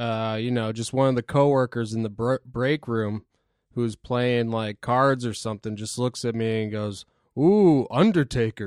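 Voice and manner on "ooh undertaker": put-on mocking, teasing tone, louder. Retelling a coworker's teasing remark in the break room: imitating a mocking jab. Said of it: "did it as, like, a piss take".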